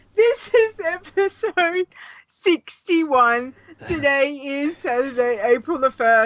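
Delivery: talking through held-back laughter. Opening a podcast episode after being made to crack up, barely able to talk from laughing. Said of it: "I can like barely talk".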